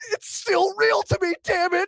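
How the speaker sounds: very high, loud, overwrought emotional outburst. Quote the guy talking about pro wrestling in an online video, imitating a really emotional guy. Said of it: "and he gets really emotional".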